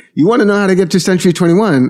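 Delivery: put-on heavy, very high New York Italian accent. Retelling asking a man working in a truck for directions, brooklyn italian guy accent. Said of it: "very, very Brooklyn, New York, Italian guy".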